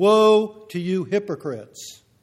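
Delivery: loud, slow, deliberate delivery, "woe" drawn out. Retelling his words to the scribes and Pharisees, in a loud voice. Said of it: "And in a loud voice".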